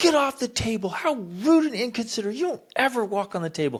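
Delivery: acted-out scolding yell, very high pitch. Acting out a parent scolding a child on the table: imitating a parent yelling.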